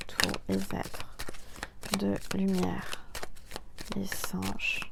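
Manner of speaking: quiet, hushed tone.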